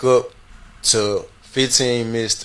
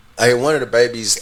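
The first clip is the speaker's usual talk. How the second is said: ordinary delivery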